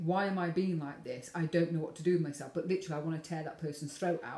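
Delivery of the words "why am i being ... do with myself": plain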